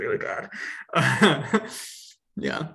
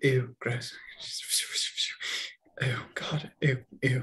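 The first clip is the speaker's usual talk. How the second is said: slow muttering under the breath; 5 dB quieter than usual. Voicing a character cleaning people with magic as he walks by: muttered under his breath. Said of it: "He's trying to be quiet about it".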